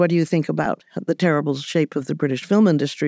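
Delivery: ordinary delivery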